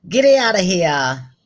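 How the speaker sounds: thick New York accent. Suggesting how to say goodbye in Yonkers, in a thick New York accent. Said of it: "say goodbye in a really thick New York accent".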